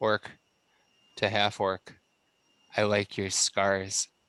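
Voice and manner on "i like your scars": quiet, tender, soft, gentle murmur. Speaking in character while stabbing an orc: said softly and gently. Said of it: "I say softly, gently".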